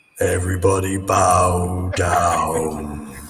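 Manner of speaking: grand, booming god voice, drawn out. Asked by the others for a god voice, the speaker gives one: god voice. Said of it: "have you got a god voice you can give us?".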